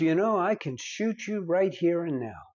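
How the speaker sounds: usual speaking voice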